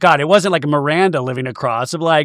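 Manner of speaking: ordinary talk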